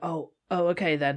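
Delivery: put-on dry, flat, expressionless deadpan. Speaker retelling what a woman says before walking off: imitating a deadpan remark. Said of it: "almost deadpan in the way that she talks".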